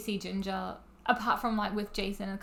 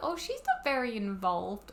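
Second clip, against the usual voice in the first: usual speaking voice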